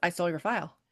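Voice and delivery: put-on offhand, casual tone. Retelling a scene between two characters, quoting his reply: imitating a very nonchalant delivery. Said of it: "like, very nonchalant".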